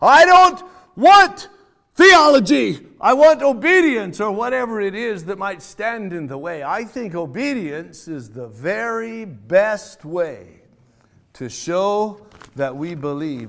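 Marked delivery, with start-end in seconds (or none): 0.0-4.2 very loud, very high, heavenly-sounding holler. Speaker imagines God calling down from heaven: God hollering down from heaven. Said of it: "God just hollering down from heaven".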